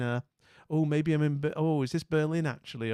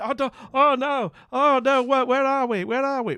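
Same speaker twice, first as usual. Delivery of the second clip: mock frantic, high, loud, stammering, flustered panic; 10 semitones higher, 7 dB louder than usual. Playing a map guessing game, imitating the opponents: mock panic. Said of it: "they're like".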